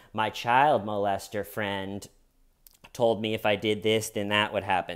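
ordinary talk

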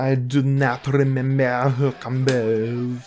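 put-on French accent. Player getting ready for a match, repeating a line in a put-on French accent. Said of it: "That's my French accent".

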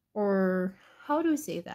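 plain

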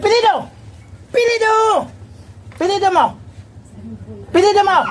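high, sharp, harsh, barked shouts.

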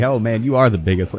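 ordinary delivery

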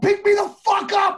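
very high, shrill, very loud screaming. Recounting screaming at his wife at the time, retelling a scream. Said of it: "I'm screaming at my at the time wife".

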